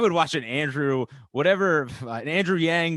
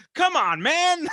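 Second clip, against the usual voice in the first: angry, irritated, snapped sharply at very high pitch; 14 semitones higher than usual. Acting out the president's reply to a female reporter who hounded him, imitating Biden snapping angrily. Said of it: "a female reporter that like hounded him".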